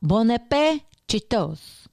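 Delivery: terrible, really bad put-on French accent. Saying the cookbook title Bon Appetit Cheetos: really horrible French accent. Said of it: "I went with my really horrible French accent there".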